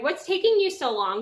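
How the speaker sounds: mock-impatient kid voice. Speaker retelling a kid's complaint while setting up breakout rooms, mock-impatient. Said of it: "getting very impatient".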